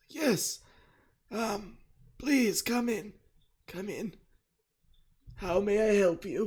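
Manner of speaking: hoarse, weak voice. Voicing a character who invites visitors in: hoarse and weak voice. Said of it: "his voice is like crazy hoarse and weak".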